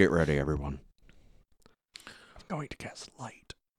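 soft, hushed stage half-whisper. Warning the party in character before casting light: half-whispering. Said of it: "That's how you whisper".

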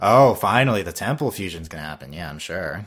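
heavily sarcastic mocking tone. Discussing an anime's fusion arc with another fan, sounding sarcastic. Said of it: "You sounded really sarcastic right there".

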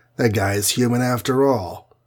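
ordinary delivery

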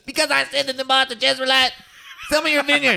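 very high put-on cartoon voice. Retelling a story about a vineyard, the speaker does Eric Cartman voice. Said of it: "I gotta do my Eric Cartman voice".

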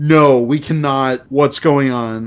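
ordinary talk

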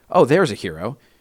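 normal talking voice

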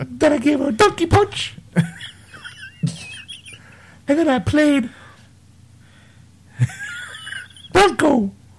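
bad put-on cartoon mouse voice. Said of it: "That totally didn't even sound like Mickey".

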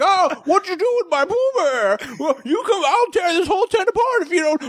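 very high, overacted, hammy movie-style bluster. Imitating an overacting movie character threatening to tear the tent apart: overacted movie character voice. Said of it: "That's a pretty good voice".

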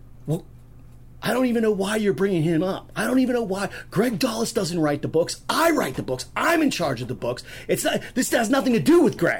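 put-on pissed-off rant, loud and high-pitched. Retelling what a woman loudly said in the production room: retelling a loud angry outburst. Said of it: "she loudly goes".

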